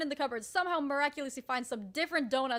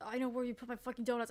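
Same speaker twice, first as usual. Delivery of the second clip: put-on sleepy mumbling, quieter; 6 dB quieter than usual. Retelling how someone talked while asleep and searching cupboards: imitating sleep mumbling. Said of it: "mumbling 'cause he's asleep".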